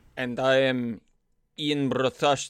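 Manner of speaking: failed accent sliding into Russian. A podcast host introduces himself at the episode's start, failed accent sounding Russian. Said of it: "I sounded Russian".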